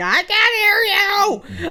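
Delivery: screaming. Retelling an injury, screaming to B-dubs about the leg: imitating her own screaming. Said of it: "'cause I'm just screaming, like".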